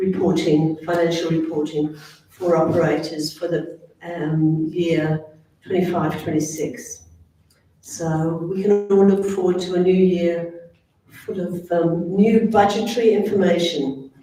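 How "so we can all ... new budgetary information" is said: dry, mildly sarcastic delivery. Announcing new financial reporting for the coming year: a bit sarcastic. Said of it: "a bit of sarcasm in her voice".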